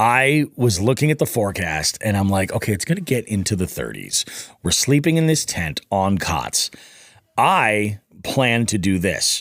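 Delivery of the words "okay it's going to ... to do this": ordinary talk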